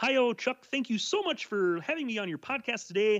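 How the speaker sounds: high, thin puppet frog voice. Guest thanks the podcast host, Chuck, for having them, in Kermit the Frog voice. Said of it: "I'll do Kermit the Frog for you".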